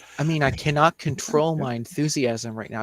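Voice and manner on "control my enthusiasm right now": ordinary talk, nothing marked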